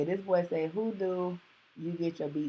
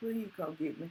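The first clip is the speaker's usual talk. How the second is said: soft, crying, tearful, begging little voice; 6 dB quieter than usual. Retelling calling a brother from jail: imitating own past crying. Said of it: "I was crying like a little bitch".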